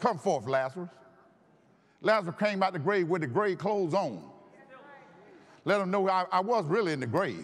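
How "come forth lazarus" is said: ordinary talk, nothing marked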